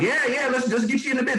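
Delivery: pushy, far too keen. Showing how not to sound with a referral source, mock over-eager, pushy. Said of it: "I didn't sound all thirsty, like".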